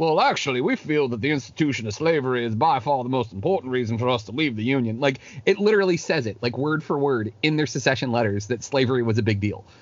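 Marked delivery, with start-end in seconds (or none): 0.0-5.0 put-on southern gentleman accent. Reading aloud from a state's secession letter, in the Southern gentleman voice. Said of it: "you can't read them without reading them in the Southern gentleman voice".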